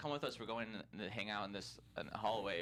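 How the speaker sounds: plain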